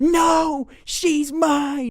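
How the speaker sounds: put-on very high-pitched screeching child scream. Retelling a boy screaming while a teacher escorts him off: imitating a kid screaming. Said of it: "Bartholomew was screaming".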